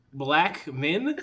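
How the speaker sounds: two words kept separate. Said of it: "he didn't say it like a name".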